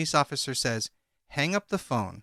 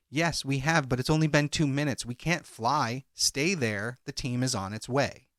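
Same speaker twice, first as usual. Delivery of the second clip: ordinary delivery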